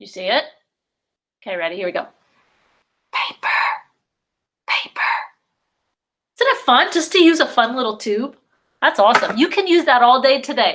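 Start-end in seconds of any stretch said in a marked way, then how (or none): 3.1-5.0 soft, hushed whisper, word said twice. Leading a group word activity, saying the last word in a whisper. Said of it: "We're gonna whisper this one".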